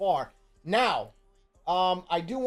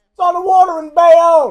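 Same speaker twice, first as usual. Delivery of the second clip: piercing, shrill scream, very high and very loud; 11 semitones higher, 17 dB louder than usual. Retelling how a ballplayer in the dugout screamed out: imitating someone screaming. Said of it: "One guy screams out".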